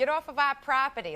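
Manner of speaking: put-on Boston accent. Recalling what the neighbor boys always said, imitating the Outwater Boys' Boston accent. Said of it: "they'd get a Boston accent".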